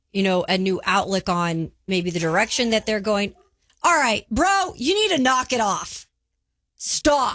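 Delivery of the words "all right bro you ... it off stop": high-pitched scolding voice. Live on the radio, breaking off mid-thought to start yelling and scolding her dog. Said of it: "Kayla's now yelling and scolding her dog".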